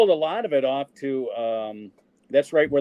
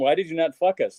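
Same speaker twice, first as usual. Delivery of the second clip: put-on Greek accent, focus said like fuck us; 3 semitones higher than usual. Retelling what the instructor always said about their films in class, in a put-on Greek accent. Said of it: "with his Greek accent".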